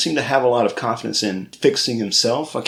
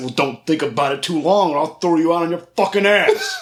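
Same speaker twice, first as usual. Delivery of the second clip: mock-offended voice, higher, faster; 5 semitones higher than usual. Recounting a story, the speaker acts out someone's reply: mock-offended threat. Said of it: "Darnell's immediately offended".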